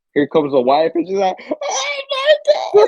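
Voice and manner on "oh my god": play-acted very high, shrill shrieking scream. Describing a TV episode, the speaker acts out the wife screaming. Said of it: "And then she's screaming".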